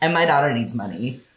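put-on sassy, sashaying voice, laid on thick.

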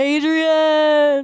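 long, drawn-out hollered call, stretched into one shout. Doing a quick impression after mentioning Sylvester Stallone: Sylvester Stallone impression. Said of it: "That's my impression".

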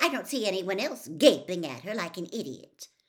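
tart, sharp, acid tone. Reading a story, the narrator voices a girl contradicting a boy, tartly. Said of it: "said Hermione tartly".

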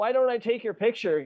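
fake, insincere voice. Retelling a movie character's line, imitating a fake, insincere line. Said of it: "He said it in the most fake way possible".

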